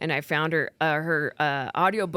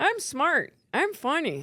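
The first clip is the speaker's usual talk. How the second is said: very high, swooping, mocking sarcastic drawl; 9 semitones higher than usual. Showing how positive words about themselves sound in their voice: sarcastic tone. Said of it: "my voice unfortunately sounds sarcastic, so I don't use my voice to say positive words because it'd sound like this".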